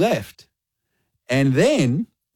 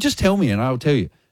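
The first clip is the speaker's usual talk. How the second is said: ordinary talk, nothing marked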